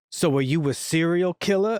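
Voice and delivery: dead dry, flat, deadpan delivery with no reaction. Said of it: "just so dry every time".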